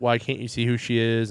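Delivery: normal talking voice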